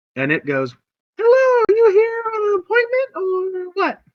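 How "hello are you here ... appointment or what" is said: tiny fey-creature or little dragon voice, very high, loud. Describing a scene to the players, the speaker greets them in little fey dragon voice. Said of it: "There's this little violet fey dragon".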